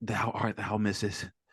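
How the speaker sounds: mock old English voice, slow and hushed. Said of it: "Ew, why do you have that voice?".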